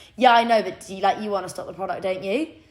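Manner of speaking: brash, cocky, arrogant know-it-all tone. Retelling a pitch to a shop buyer: imitating her own cocky remark. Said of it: "I was so arrogant or so cocky".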